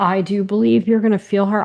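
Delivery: choked-up voice, catching with emotion. Telling a listener about a presence felt around them, choked up. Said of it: "I'm choked up".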